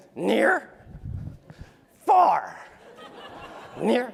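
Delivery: silly puppet monster voice, rough and creaky. A fan shows the audience an impression of a beloved puppet, Grover imitation. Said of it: "I can do a Grover imitation".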